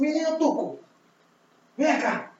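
very loud, very high holler. Voicing an old man in a bar who calls out: loud calling voice. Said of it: "ele fala alto pra porra e fala assim".

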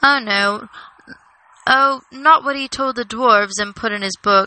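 ordinary delivery, nothing marked

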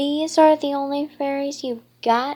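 big, loud, booming, bellowing roar. Narrator voices a figure at the throne addressing approaching fairies, bellowing. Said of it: "Magu bellowed".

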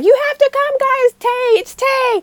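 screaming at very high pitch. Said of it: "Hobi comes up and starts screaming".

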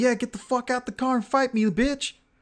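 high-pitched, acted-out screaming taunt tone. Retelling how a stranger by the truck screamed at him: imitating someone screaming. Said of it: "he's screaming at me saying".

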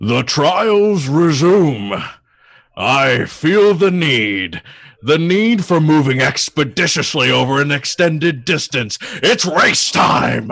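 thundering, booming, high godlike announcer voice. Narrating the story as Hercules speaks across the mountains: booming Hercules voice. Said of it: "the voice of Hercules once again booming out".

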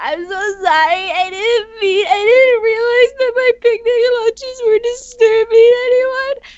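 put-on crying. Acting out someone crying to the teacher: mock crying. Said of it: "it would cry to the teacher and be like".

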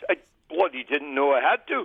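put-on in a Scottish accent. Retelling a father's reply to the coach: imitating dad's Scottish accent. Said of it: "in his Scottish accent".

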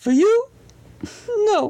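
put-on very high, sing-song, babyish baby voice. Reading a story aloud, voicing a baby-shaped toy: baby voice. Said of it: "in a baby voice".

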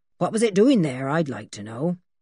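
ordinary delivery

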